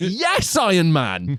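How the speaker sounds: high, thrilled, excited cheering. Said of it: "And you're like".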